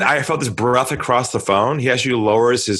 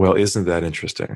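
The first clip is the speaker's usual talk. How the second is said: put-on lowered, dropped voice; 6 semitones lower than usual. Retelling an inbound sales call, repeating your own reply to the caller: lowered voice. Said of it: "I lowered my voice and I said to him".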